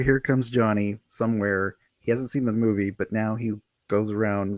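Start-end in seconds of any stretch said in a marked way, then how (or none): none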